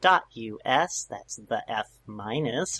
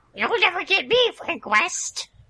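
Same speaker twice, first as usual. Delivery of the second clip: very high, loud, silly, taunting villain voice; 5 dB louder than usual. Taunting Frank West at the end of an episode, the speaker uses a put-on villain voice. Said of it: "It's a really good voice".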